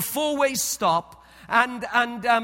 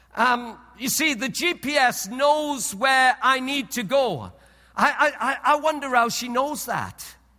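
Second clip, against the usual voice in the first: ordinary delivery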